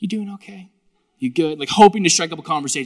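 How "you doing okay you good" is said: caring, concerned, pastor-like tone. Retelling checking on an actor he just met: imitating own pastoral tone. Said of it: "most pastoral way I can".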